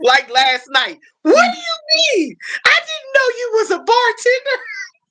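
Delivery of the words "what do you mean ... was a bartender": very high, squeaky, mock teasing voice. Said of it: "She always teases me".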